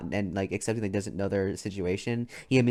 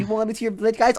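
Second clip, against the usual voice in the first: mocking, teasing, higher-pitched voice; 13 semitones higher, 7 dB louder than usual. Mocking another player's character, who complains about a village: mocking Jamal impression. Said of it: "and Jamal's like".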